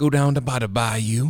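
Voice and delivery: laughing, put-on Southern accent. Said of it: "sounds like you're gonna cook gator".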